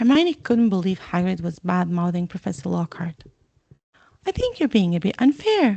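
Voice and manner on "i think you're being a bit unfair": high, strained voice with swooping pitch. Narrator reads Hermione's reply to Hagrid, in a high, strained voice. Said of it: "she said with a high, strained voice".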